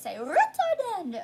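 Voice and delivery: goofy, daft silly voice, high and loud. Asking listeners to repeat a music term, in a silly voice. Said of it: "Now say it in a silly voice".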